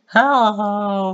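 shrill, very high, very loud, drawn-out holler. Watching an old video of themselves, speaker imitates own past high voice. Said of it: "My voice was so high back then".

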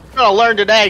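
Texas accent, hollered high and shrill. Retelling what someone said while being shot at, in a Texas accent. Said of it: "you're gonna learn today in this Texas accent".

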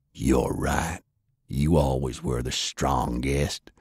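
low, close, hushed half-whisper. Narrator reading a man who pulls his brother's face close: half-whispered. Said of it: "He pulled his brother's face in close and whispered".

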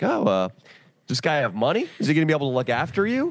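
completely sarcastic, dripping, sing-song. Retelling what the speaker asked her about the guy: retelling a sarcastic question. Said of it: "I asked her completely sarcastically".

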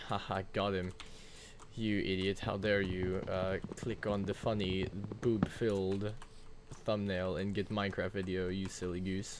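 plain

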